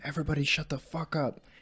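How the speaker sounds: put-on mild, contained, held-back yell. Recalling standing on a table to silence a crowd, retelling own past shout. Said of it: "I just started shouting".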